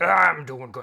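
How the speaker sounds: very loud, clumsy, badly done, belted character voice. Voicing Bonin greeting a visitor, horrible Bonin voice. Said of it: "Gotta find a better way to do that voice".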